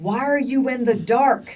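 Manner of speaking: mock screaming. Retelling screaming at the tv during video calls: retelling screaming at the tv. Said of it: "I'm screaming at my T V".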